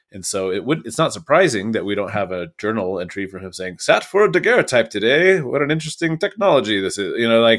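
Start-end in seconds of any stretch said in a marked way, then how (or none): 3.8-7.2 put-on old-timey radio voice, raised pitch. Voicing an imagined journal entry about a daguerreotype: old-timey FDR radio voice. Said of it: "I don't know why I put on the old timey FDR radio voice".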